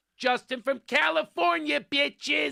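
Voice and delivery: put-on shouted high-pitched in a Philadelphia accent. Retelling a woman heard in the background of a video: Philadelphia accent. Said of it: "a woman in the background with a Philadelphia accent going".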